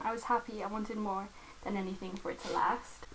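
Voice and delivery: ordinary talk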